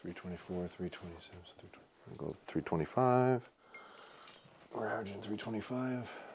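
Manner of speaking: quiet, very soft, hushed near whisper. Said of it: "I'm gonna be quiet for the next three arrows or just whisper".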